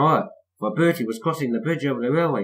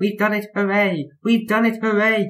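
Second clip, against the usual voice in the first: chattering away, much higher pitch; 7 semitones higher than usual. Two characters cheer in the tunnel after the race, chattering. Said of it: "chattered Annie and Carvo".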